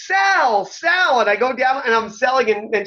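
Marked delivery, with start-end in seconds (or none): 0.0-1.2 acted-out screaming at a very high pitch. Retelling being hit with a cane on tape, imitating Missy Hyatt screaming. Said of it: "and then she starts screaming".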